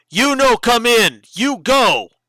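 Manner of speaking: really loud, high, forceful voice. Describing a character, the speaker acts out his words, speaking up really loud. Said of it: "Then he speaks up really loud".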